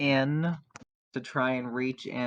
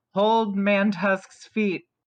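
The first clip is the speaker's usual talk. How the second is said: loud, high-pitched shout; 7 semitones higher, 6 dB louder than usual. Playing a character looking back at the group: yelling in character. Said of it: "I'm gonna look back at the group and I'm gonna yell".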